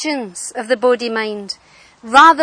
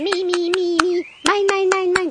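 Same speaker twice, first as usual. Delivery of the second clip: tiny, high, animated cartoon creature voice; 7 semitones higher than usual. Describing a bit in an animated film to a listener: little Nemo creature voice. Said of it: "I kind of hear the little Nemo voice".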